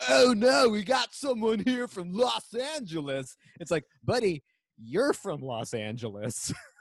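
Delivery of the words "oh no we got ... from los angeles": pitched-up California surfer dude talk. Recounting what Jay said about someone from Los Angeles, in Jay's surfer dude voice. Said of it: "He literally talks like a surfer dude".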